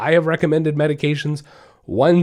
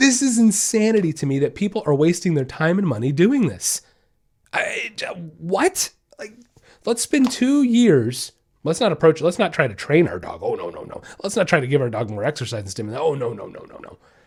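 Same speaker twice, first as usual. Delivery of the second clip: mildly angry, fed-up, ranting tone. Speaking to the audience, sounding a little mad. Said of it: "I'm sorry if I'm sounding a little mad today".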